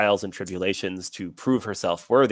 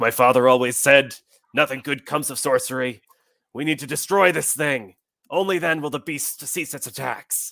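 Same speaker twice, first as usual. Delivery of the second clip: loud, gruff, rousing cry; 6 semitones higher, 4 dB louder than usual. Narrating a scene, voicing the blacksmith who speaks loudest: gruff blacksmith voice. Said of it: "the loudest voice is a, like gruff blacksmith looking man".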